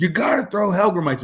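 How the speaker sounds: high, angry, agitated, worked-up outburst. Telling a fishing story, acting out an angry man's demand, imitating him freaking out. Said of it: "Like he starts freaking out".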